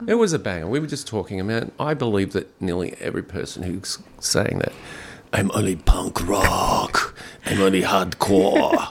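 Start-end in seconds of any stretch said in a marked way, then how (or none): 5.3-8.9 very slow, put-on, approximate German accent. Quoting people the hosts were just talking about, in a sort of German accent. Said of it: "I don't know why I do it in a sort of German accent".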